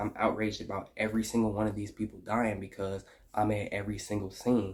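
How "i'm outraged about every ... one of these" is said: usual speaking voice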